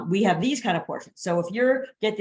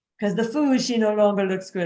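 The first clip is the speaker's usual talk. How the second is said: clumsy, badly faked put-on French accent; 3 dB louder than usual. Quoting a french diner on why they stop eating: bad french accent. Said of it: "if I had a French accent".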